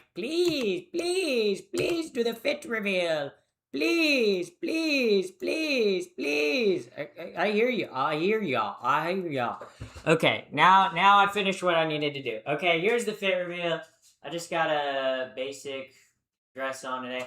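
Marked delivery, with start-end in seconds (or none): 0.2-6.9 eager, insistent, high, drawn-out begging. Imitating impatient viewers begging for the fit reveal: imitating viewers begging eagerly. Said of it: "You're like rabid dogs. You're like".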